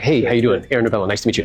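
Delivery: smiling, friendly, cheerful voice. Showing how to greet a seller at the door: smiling friendly greeting. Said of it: "I had to smile".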